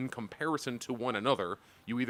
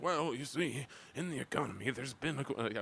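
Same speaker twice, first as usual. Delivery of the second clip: strained put-on old-man voice, much quieter; 7 dB quieter than usual. Quoting an old man's interview answer about tariffs: RFK impression. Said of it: "I'm making him sound like R F K".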